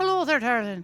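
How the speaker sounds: put-on Irish accent. Voicing Seamus from the game, who is Irish: Irish accent as Seamus. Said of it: "Seamus, you're Irish".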